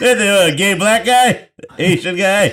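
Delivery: put-on hesitant rambling old man. Mocking another speaker's recap by imitating an old man talking. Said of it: "You sound like an old man".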